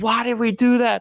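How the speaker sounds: re-enacted yell. Recounting a goal conceded at the stadium, retelling own yell. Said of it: "I'm yelling because it's literally the last play".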